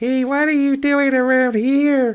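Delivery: goofy, very high dubbed-film voice. Imitating a character's voice from a movie dub: imitating a funny dub voice. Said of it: "funniest kind of ... kind of voice".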